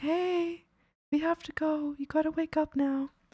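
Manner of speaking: gentle, hushed, soft and slow murmur. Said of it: "I'll be, like, so quiet about it".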